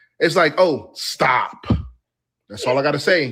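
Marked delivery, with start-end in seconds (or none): 0.6-1.7 put-on menacing voice. Reacting to a clip and imitating how it sounded: imitating Candace Owens sounding threatening. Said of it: "That sounded like a threat".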